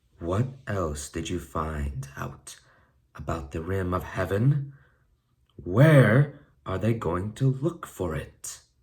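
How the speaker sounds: dangerous, menacing tone with veiled threat. Narrator reads Nettlebrand questioning a frightened Twigleg, in a dangerously soft voice. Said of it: "said Nettlebrand in a dangerously soft voice".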